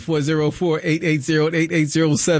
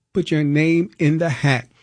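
ordinary delivery

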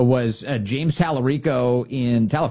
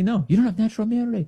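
put-on scream, much higher pitch and faster; 9 semitones higher than usual. Speaker recounting catching COVID, retelling Fauci screaming at him. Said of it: "He's screaming at me".

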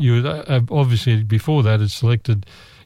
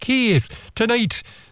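very high failed accent attempt that slips into Scottish; 11 semitones higher, 4 dB quieter than usual. Retelling what a lady said to them overseas: attempted imitation of her accent. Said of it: "I'll try and do her accent".

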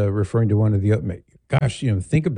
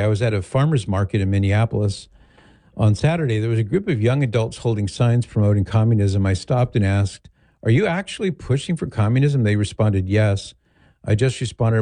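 ordinary talk, nothing marked

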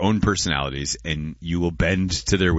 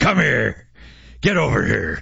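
rough, pitched-up, raised growling voice; 6 semitones higher than usual. Describing what he heard in his head when a woman waved, Scorpion voice. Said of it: "saying in Scorpion's voice".

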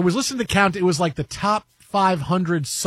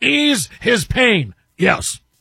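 put-on sportscaster voice; 3 semitones higher, 4 dB louder than usual. Showing how a line could be read differently, Marv Albert impression. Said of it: "I can do it like Marv Albert".

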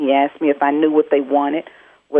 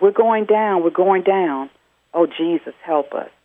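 put-on yelling, pitched much higher; 4 semitones higher than usual. A call-center worker repeats what a man yelled as his plane dove, retelling a yell. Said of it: "he yelled out".

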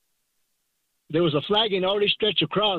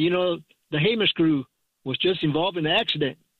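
plain

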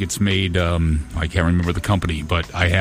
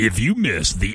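big radio promo announcer voice; 3 semitones higher than usual. Doing morning show theater on the radio, a quick big promo voice guy. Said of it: "Can you do a quick big promo voice guy for me?".

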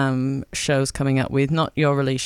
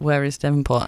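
ordinary talk

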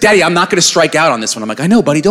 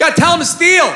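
put-on barking voice, much higher; 12 semitones higher than usual. Imitating the speaker's dad coaching from the side at a game, barking orders. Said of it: "barking orders from the side".

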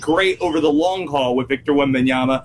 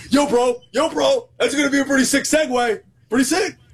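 douchey frat bro voice, much higher pitch; 9 semitones higher than usual. Getting too excited about a segue, the speaker slips into a douchey frat bro voice. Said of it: "I sound like a douchey frat bro when I do so".

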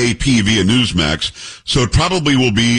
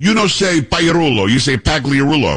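put-on thick Italian accent, higher, slower; 3 semitones higher than usual. Speaker retelling what a woman said about how the speaker's name is pronounced, imitating a thick italian accent. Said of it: "a woman comes up to me with a thick Italian accent and says".

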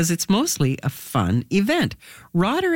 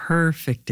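the word "perfect" stressed. Radio host reading event listings from a script, stressing the word perfect. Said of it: "Did you hear how I said perfect?".

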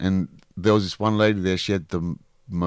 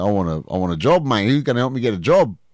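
put-on Australian accent through every word; 3 semitones higher, 4 dB louder than usual. Retelling a man asking for a job at a community centre: imitating an aussie accent. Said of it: "sounds more Aussie than me".

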